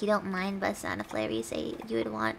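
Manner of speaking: plain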